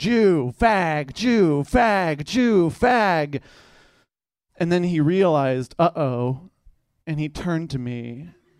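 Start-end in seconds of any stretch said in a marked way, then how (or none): 0.0-3.4 put-on screaming, very slow and dragged out. Speaker retells a speeding driver yelling at every car passed, imitating someone screaming slurs. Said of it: "just screaming".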